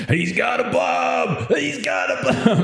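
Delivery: high, drawn-out, raspy yell at full volume. Storyteller voices Bunslinger chasing the man with the bomb, shouting at the top of his lungs. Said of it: "at the top of his lungs".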